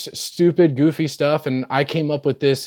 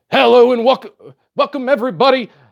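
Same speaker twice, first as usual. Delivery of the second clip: put-on high, amped-up, hyped salesman pitch voice; 9 semitones higher, 3 dB louder than usual. Retelling a sales pitch to a customer, imitating being amped up. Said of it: "I get all amped up and I go".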